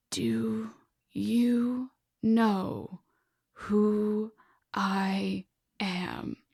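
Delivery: put-on raspy old man, soft, slow, each word chewed. Narrating a folktale, the old man answers the one who grabbed him, raspy old man's voice. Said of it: "the old man spoke in a raspy voice".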